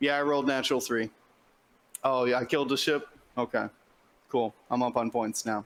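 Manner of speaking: flat, unexcited monotone with no excitement. Describing a player who skips small talk and just plays to win; flat monotone. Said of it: "that level of like monotone".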